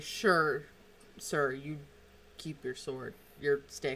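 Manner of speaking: amused, chuckling delivery laced with laughter. Voicing guards who let a player keep his staff: chuckling while speaking. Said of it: "They chuckle and say".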